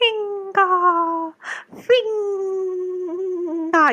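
tiny, high, drawn-out little sprite voice, calling out. Mimicking how the listener called out a name, Lathel as a little sprite. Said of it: "You sound like a little sprite".

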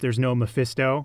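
usual speaking voice

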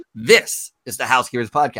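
heavy stress on the word "this". Practicing the podcast intro with emphasis on the first word: stress on this. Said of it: "the emphasis is going to be on this".

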